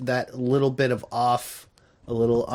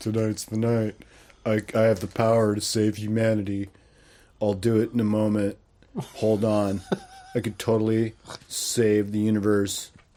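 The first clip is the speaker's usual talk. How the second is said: put-on flat, level monotone with no emotion; 3 semitones lower than usual. Imitating a character's lines to mock the acting, flat monotone. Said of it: "His acting is so monotone".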